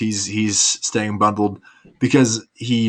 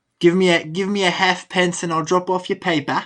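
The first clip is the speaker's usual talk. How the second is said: very high, fake, put-on British accent; 9 semitones higher than usual. Joking on stream about a Victorian-era newsie, in a put-on British accent. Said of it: "saying my accent wasn't good?".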